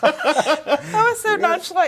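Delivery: high, loud, laughing while talking.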